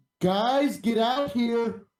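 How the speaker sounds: very slow, high, thundering, booming voice. A player casts a spell to amplify their voice and calls the group, booming voice. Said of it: "my voice booms up to three times louder".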